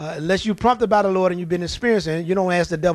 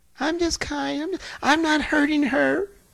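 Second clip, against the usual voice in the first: meek, sweet, demure voice, high and slow; 9 semitones higher than usual. Retelling the devil pretending to be kind: imitating a nice, demure voice. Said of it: "called himself being nice and demure".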